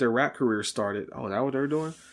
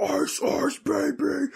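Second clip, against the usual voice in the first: very high, rough growling yell; 13 semitones higher than usual. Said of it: "growl yelling into the camera".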